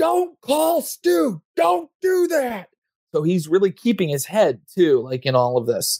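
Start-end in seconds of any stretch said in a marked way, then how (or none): 0.0-2.7 very high shouting in character voice. Voicing a character dodging a shotgun blast: shouting in character.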